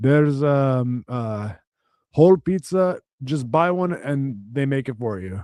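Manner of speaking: put-on Ethiopian accent. Retelling a store worker's directions to the pizza: attempted Ethiopian accent. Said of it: "I don't know how to do an Ethiopian accent".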